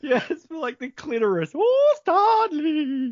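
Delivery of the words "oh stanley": put-on fairy godmother voice, much higher, louder. Acting out the clitoris speaking to stanley, in a fairy godmother voice. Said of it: "The fairy godmother voice".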